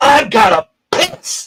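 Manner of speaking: very high, very slow, loud drawn-out scream. Retelling jumping up in the recovery area: retelling own scream. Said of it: "I screamed it".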